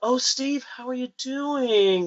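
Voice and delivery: odd sympathetic pity, very high and drawn-out. Retelling how coworkers greeted him after a robbery: imitating a weird sympathetic tint. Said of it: "with that weird tint in their voice".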